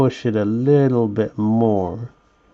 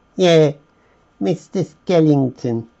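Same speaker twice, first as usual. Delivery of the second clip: playful put-on Cockney accent, pitched up; 5 semitones higher than usual. Setting out the skeleton figures, playing around with a Cockney accent. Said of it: "playing around with that Cockney accent".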